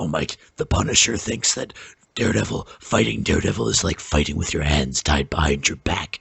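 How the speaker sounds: very low, deep, dopey, stupid-sounding voice. Arguing about Daredevil, the speaker mimics the other side's point in a Punisher impression. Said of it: "I was doing an impression of the Punisher because his voice sounds stupid".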